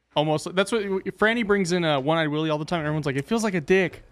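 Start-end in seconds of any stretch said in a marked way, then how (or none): none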